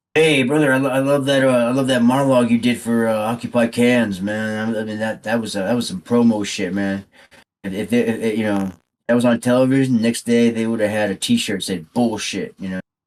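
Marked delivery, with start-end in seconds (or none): none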